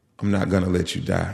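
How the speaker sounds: put-on, imitated, reassuring, assuring tone. Retelling what a nurse said to them, in a reassuring voice. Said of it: "in the most assuring voice".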